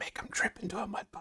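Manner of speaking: small, little whispered voice. Voicing a little voice inside a player's head: little voice inside your head. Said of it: "you hear this little voice inside your head going".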